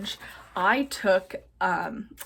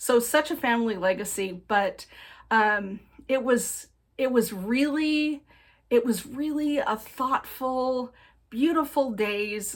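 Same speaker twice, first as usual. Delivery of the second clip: choked up, emotion catching in throat, voice breaking; 3 semitones higher than usual. Speaker recalling a thoughtful family day with a cousin, getting choked up. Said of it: "getting all choked up".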